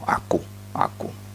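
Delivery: breathy whisper, full of ego. Explaining what a word means, demonstrating it said in an egotistic tone. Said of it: "tapi dengan nada ego".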